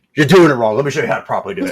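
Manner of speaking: put-on gruff anime-style father voice. Retelling the anime scene, voicing Vegeta correcting his son: imitating Vegeta. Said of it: "Vegeta looks over him".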